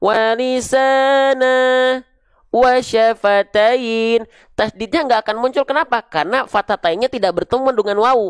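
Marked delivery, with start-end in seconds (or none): 0.0-4.2 break between walisana and wasyafatain, pitched up. Reading the phrase piece by piece, pause between walisana and wasyafatain. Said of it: "Misalnya kita baca sepenggal-sepenggal".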